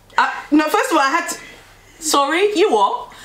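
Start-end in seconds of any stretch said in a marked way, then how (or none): 2.0-3.0 put-on English accent suddenly resurfacing, slipping back out. Retelling a reply to a question about the beans: English accent. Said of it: "my English accent came back out".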